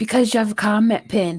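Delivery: spoken in a whisper. Explaining to another speaker why the mute icon is hidden, whispering. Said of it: "totally, like, whispering right now".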